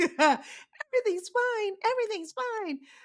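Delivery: put-on very high, slow voice of a tiny old lady. Voicing what the news keeps telling people: little old lady voice. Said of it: "I make the news sound like a little old lady".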